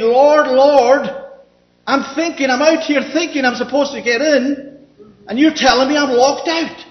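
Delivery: acted-out calling out, shouting. Acting out people outside the narrow gate calling to the lord: imitating people shouting. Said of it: "outside of the gate shouting".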